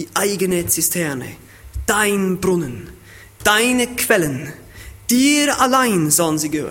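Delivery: stress on eigene, dein, deine, dir.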